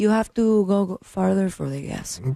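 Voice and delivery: put-on Spanish accent on English. Retelling a man's answer in a story about a car trip, in a put-on Spanish accent. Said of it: "That's exactly what your Hilario Baldwin sounds like".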